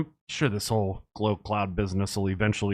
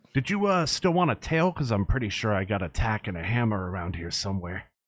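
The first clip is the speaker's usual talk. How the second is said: amused voice broken by little chuckles. Speaker voices a character during a tabletop role-play game, with a little chuckle. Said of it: "He says with a little chuckle".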